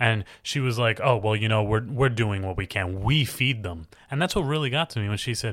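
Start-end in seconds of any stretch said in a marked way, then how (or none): 1.0-3.9 put-on condescending tone. Retelling her answer to Wolf's concern: imitating a condescending tone. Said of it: "she was so condescending with Wolf".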